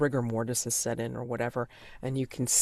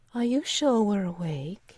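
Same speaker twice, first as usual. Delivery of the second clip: thin, high, airy wisp of a voice; 8 semitones higher, 3 dB louder than usual. A storyteller voices someone speaking behind the listeners, in a wispy voice. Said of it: "a wispy voice saying".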